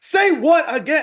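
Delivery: frantic outburst, very high, shrill and loud. Retelling an argument with a man who called Northerners rude, going nuts Samuel L. Jackson-style. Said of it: "just going nuts".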